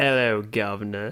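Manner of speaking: forced, put-on British accent. Someone keeps urging you to try an accent; answer in a put-on British accent. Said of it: "Try to do a British accent".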